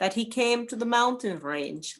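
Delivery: ordinary delivery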